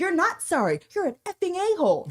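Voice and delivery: imitated angry yell. Retelling a woman berating a guy in Costco, retelling an angry yell. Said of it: "berating this guy in Costco and yelling at him".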